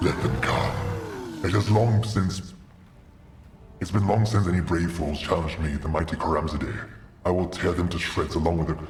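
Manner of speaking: very deep demon voice, pitched way down. Narrating a game scene as foes arrive, voicing the demon Karamzadeh in a deep demon voice. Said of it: "I should probably use the deeper voice for the demons".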